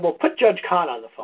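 ordinary delivery

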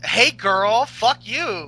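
very slow, drawn-out put-on voice. Doing an impression of how Sasha Banks sounds: Sasha Banks impression. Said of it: "Sasha Banks just sounds like".

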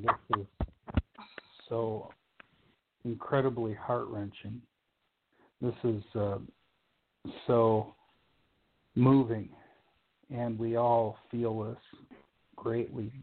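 getting choked up. Speaker reacts to a moving message for someone they love, choked up. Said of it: "I'm choked up right now".

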